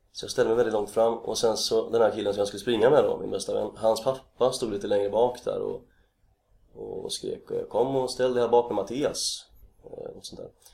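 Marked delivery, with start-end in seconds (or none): 7.7-9.5 northern Swedish Norrland dialect. Retelling his best friend's dad calling him to the back; Northern Swedish accent. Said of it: "På norrländska?".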